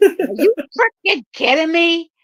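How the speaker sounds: put-on gritty New York Italian accent. Imitating a friend, a reseller whose buyers stopped paying: Dee impression, New York Italian accent. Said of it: "one of the first impersonations I've ever did".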